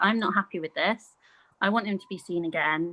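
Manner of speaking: ordinary talk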